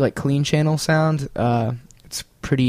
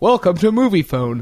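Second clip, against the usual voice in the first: put-on phone announcer voice, higher; 6 semitones higher, 3 dB louder than usual. Retelling a Family Guy scene, quoting the movie phone guy: Moviefone guy voice. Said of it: "the movie phone guy, he's like".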